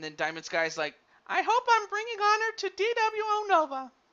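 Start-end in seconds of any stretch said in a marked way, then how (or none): 1.3-3.8 silly, very high, ladylike voice. Narrating the action, voicing Diamond Sky's thoughts in a silly lady voice. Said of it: "my my my my lady voice".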